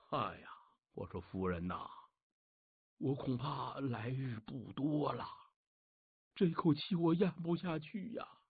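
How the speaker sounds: very hushed, quiet, feeble, strengthless dying sickbed voice. Storyteller voices a seriously ill man speaking to his wife, weak feeble sick voice. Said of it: "柴成皇是有气无力呀".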